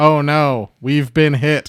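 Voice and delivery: slow, flat, mechanical monotone robot voice. Recapping a story, quoting the robot's reaction in a monotone robot voice. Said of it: "the robot in the most monotone voice goes".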